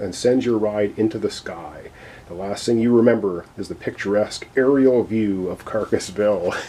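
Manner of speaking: ordinary delivery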